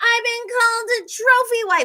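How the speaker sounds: put-on, shrill, top-of-the-lungs scream, very high pitch. Recapping an argument between Bronwyn and Brittany, mock Bronwyn screaming. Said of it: "starts screaming at the top of her lungs".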